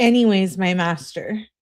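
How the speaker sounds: normal talking voice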